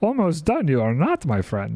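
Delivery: swooping, sing-song, pitch-swinging tiny sage-like creature voice. Answering someone who says they're almost done: Yoda voice. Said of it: "I don't know why I'm doing a Yoda voice".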